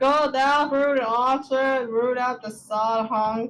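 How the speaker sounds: plain reading voice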